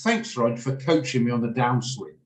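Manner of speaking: put-on sarcasm laid on heavy and dripping. Retelling a golfer's reply after unasked advice: imitating heavy sarcasm. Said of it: "Heavy with sarcasm".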